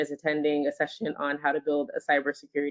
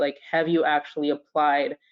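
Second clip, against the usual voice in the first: ordinary delivery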